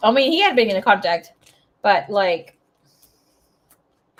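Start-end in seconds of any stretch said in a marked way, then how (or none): 0.0-1.3 been in contact stressed, a bit louder. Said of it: "not been in contact".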